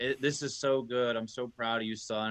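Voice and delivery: mock bawling in a put-on tearful voice. Retelling his dad's phone call after the Father's Day gift, imitating his dad crying. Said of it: "just bawling his eyes out".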